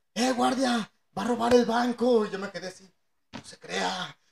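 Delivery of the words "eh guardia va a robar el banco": loud, high, raised shouting voice. Retelling how someone shouted to the bank guard, retelling a shout to the guard. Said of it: "le grita al guardia".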